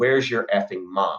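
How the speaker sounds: mock irritated muttering. Retelling how an annoyed uncle stormed around the house: imitating someone muttering under breath. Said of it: "he was muttering under his breath".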